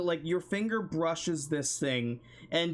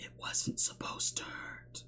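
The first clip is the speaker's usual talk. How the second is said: airy, soft, hushed, barely voiced whisper. Game master voicing a hollow-eyed figure as the player moves, whispering. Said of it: "it whispers".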